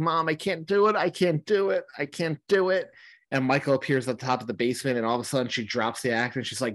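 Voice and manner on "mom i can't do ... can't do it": put-on high, tearful, broken-down sobbing voice. Retelling a film scene where Allison breaks down: imitating Allison crying. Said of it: "Allison is crying".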